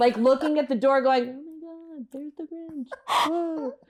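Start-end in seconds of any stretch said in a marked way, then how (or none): 1.3-2.9 very soft, pitched-up hush, as if to oneself. Retelling how a boy kept repeating a line to himself: imitating someone speaking quietly. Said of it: "he's just saying it quietly".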